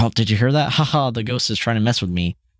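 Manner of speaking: mock ha-ha laughing through the words. Retelling a ghost game moment, imitating Satan laughing. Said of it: "laughing 'cause he thought he heard something".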